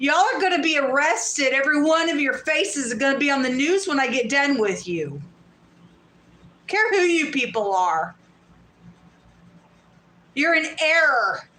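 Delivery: furious, pissed-off, threatening angry tirade. Threatening people who took their things: angry. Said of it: "'cause I'm pissed now".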